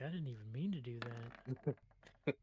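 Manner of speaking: very slow, hushed mutter under the breath. Voicing Brady right after the shot, muttered under his breath. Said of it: "say under his breath".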